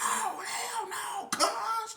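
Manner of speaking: cuz hit hard, loud, very high and slow. Retelling what a man shouted, imitating him saying cuz hard. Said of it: "He was saying cuz hard".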